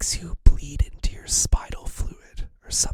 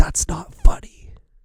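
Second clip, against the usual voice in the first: mock stern, booming, very loud; 2 semitones higher, 9 dB louder than usual. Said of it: "he looks at her very sternly, and he says".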